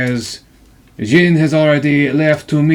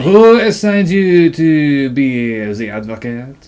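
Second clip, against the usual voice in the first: put-on thick, heavy, laid-on French accent. A role-play character questions the newly arrived advocate, in a heavy french accent. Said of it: "The one with the heavy fucking French accent".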